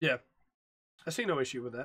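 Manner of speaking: low, bored, uninterested, disinterested tone. Agreeing with another speaker about quitting a game, disinterested tone. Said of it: "You sound just as disinterested".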